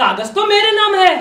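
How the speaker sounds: usual speaking voice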